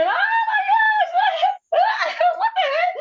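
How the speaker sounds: acted-out, very high, very slow, drawn-out cry of pain. Recounting walking in the door during labor contractions, retelling her scream. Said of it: "and I was screaming".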